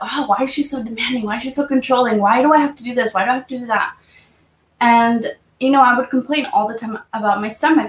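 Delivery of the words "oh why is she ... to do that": mock angry complaining tone. Retelling past thoughts about a demanding mother: imitating own angry complaints.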